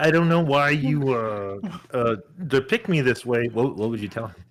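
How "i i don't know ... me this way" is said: put-on froggy voice, higher. Acting out an email from Bill Gates: Bill Gates impression sounding like Kermit. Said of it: "Why is Bill Gates sound like Kermit?".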